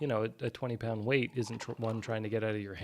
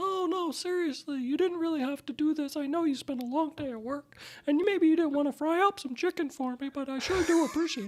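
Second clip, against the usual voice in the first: put-on very high, childlike little-girl story-character voice; 5 dB louder than usual. A speaker shows how he voices a child character in a story: child character voice. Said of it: "I play out the character voice".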